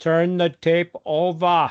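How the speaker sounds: put-on thick German accent. Quoting the woman heard at the end of a cassette's side one: thick German accent. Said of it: "in her thick German accent".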